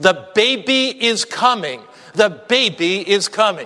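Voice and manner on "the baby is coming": plain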